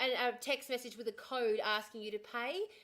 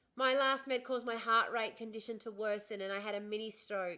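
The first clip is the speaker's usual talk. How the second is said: normal talking voice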